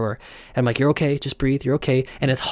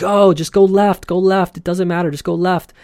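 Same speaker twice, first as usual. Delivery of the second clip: imitated screaming, pitched up, impatient; 6 semitones higher than usual. Retelling a crowd in a tunnel urging a stopped group: imitating people screaming. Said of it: "everyone's screaming at them".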